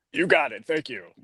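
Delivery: full, polished, maximum TV announcer voice. On a podcast, replying in maximum tv voice. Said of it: "maximum T V voice".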